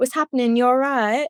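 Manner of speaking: put-on proper British accent. Retelling a funny word Kira used about traffic, imitating Kira's British accent. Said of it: "I'll try to do a good British accent".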